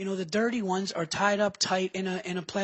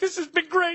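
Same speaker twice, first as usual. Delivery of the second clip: fake crying while talking, higher pitch; 10 semitones higher, 4 dB louder than usual. Retelling a prank bit done in public: mock crying. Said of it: "we turn this crying thing we do into".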